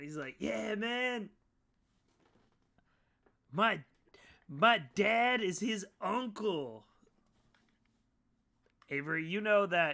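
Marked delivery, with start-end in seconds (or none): 0.4-6.8 very slow, high-pitched bro hippie drawl. Voicing the same mole man hugging a player: bro hippie voice. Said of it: "He's a bro hippie".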